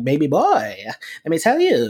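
drawn-out, sing-song funny voice swooping up and down. Imitating a comedian complaining she has no man: B Simone funny voice. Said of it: "a funny voice when she does it".

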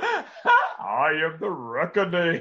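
put-on muffled, swooping British accent, as through a mask. Speaker mocking how Tom Hardy sounded as the villain, Bane impression like Bond in a mask. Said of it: "sound like James Bond with a rebreather mask on".

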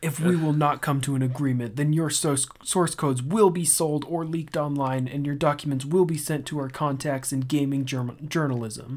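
usual speaking voice

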